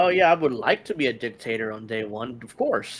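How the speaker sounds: heavy, acted, sarcastic mock-agreeing tone. Explaining what sarcasm sounds like with an example line: sarcastic. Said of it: "that was sarcasm".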